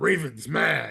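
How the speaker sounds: blunt, rough, creaky caveman voice, broken words. Co-host retelling how the other's football take sounded, talking like a caveman. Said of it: "talking like a caveman".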